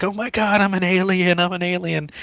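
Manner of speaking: put-on panicked freaking out, high and drawn-out. Retelling breaking an arm when younger, imitating own past freaking out. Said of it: "I was freaking out".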